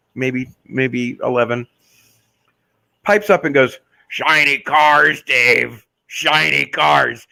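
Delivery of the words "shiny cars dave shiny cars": very slow, rough, raspy chain-smoker croak. Retelling a little girl piping up in a car dealer's ad, imitating her cigar-smoker voice. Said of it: "this voice that sounded like she'd been smoking cigars".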